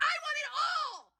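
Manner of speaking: very high-pitched, very slow, very drawn-out, loud delivery. Retelling a girl at a store register answering her mom: imitating a girl shouting. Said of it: "everyone in Sephora could hear her".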